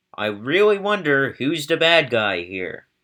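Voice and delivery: heavily sarcastic with a swooping tone. Commenting on the British shelling a fort of women and children: sarcastic. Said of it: "In case you didn't know my sarcasm".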